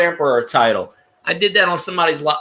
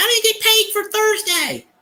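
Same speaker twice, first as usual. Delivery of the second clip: mock, very high, griping, complaining voice. Retelling what workers would say about their pay: imitating workers complaining. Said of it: "these people don't bitch".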